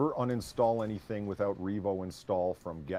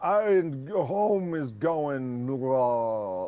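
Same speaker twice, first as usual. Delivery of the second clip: put-on loud, high, very slow, drawn-out sloppy drunken slur; 5 semitones higher, 6 dB louder than usual. Retelling how very drunk people talk: imitating slurred drunk speech. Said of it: "they're just like".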